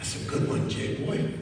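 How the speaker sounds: weak, frail, breathy whispered voice. Retelling what the speaker's dad said to him: imitating a frail voice. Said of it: "he said in a real frail voice".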